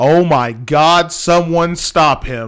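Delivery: very slow, loud, stretched-out, drawn-out holler. Retelling what a kid on the sideline yelled: imitating a kid yelling loudly. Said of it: "Just yelled it real loud".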